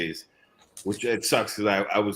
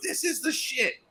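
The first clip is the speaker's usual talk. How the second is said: put-on very high, thrilled, squealing toddler voice. Retelling what a three-year-old nephew said atop a bouncy castle: imitating an excited kid. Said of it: "he's all excited".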